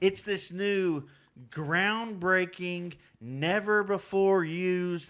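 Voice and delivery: slow, heavy, dripping, extreme sarcasm. Describing a phone commercial while making air quotes: extremely sarcastic. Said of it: "being extremely sarcastic".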